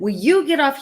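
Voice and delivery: sudden loud high yelling. Retelling how a doctor answered her question: imitating a doctor yelling. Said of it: "He yelled at me".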